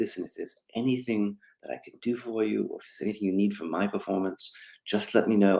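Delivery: barely-there hushed murmur, quietest possible. Retelling a fellow actor's offer of help on set, imitating Michael's quietest voice. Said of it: "in the quietest voice".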